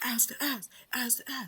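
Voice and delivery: put-on yelling in girls' voices. Retelling a chaotic movie scene where girls yell: imitating girls yelling. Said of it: "they're yelling".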